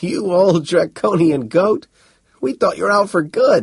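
delighted, glad, joyful and high-pitched. Seaphon joyfully answers the Arcturian who called out to him. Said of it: "answered joyfully".

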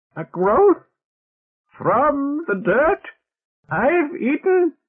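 very high, loud, gargled words. Narrator reading a character's line in a story, in a gargling voice. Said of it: "in a gargling voice".

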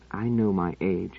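very slow, soft, under-the-breath mumble. Narrating an older man answering a woman's remark about him, muttering. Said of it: "muttered Pellerat".

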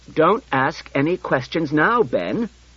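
curt, sharp, high and deliberate. A father cuts off his son Ben's questions, speaking sharply. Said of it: "interposed Bailey sharply".

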